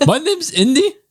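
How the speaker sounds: very high, anxious, nervous dog voice. Giving voice to the pet dog as it greets everybody; nervous Indy dog voice. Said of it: "This is the voice they gave for me because I'm always nervous".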